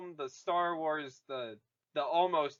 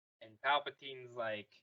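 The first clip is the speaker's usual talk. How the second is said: plain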